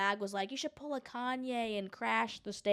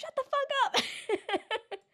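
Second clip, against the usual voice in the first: very high, very slow, drawn-out mock scolding yell. Retelling how someone answered the man: imitating someone yelling. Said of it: "someone yelled at him".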